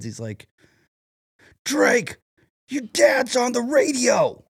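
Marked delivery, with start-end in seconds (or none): 1.6-4.3 put-on very high, very slow, drawn-out kid's yell. Retelling how a kid ran back to the car: imitating a kid yelling. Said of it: "opens the door and yells at".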